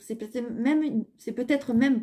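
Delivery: stumbling, fumbling words, repeated false start. Speaker addressing listeners, admits it as time runs out, stumbling over words. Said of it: "je bafouille un peu".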